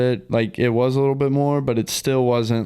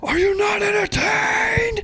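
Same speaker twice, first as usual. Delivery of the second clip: very high, shrill screaming.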